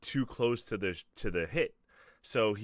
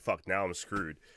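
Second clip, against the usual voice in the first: normal talking voice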